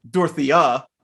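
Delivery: Dorothea with the stress on the last syllable. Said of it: "Just put the emphasis on the end".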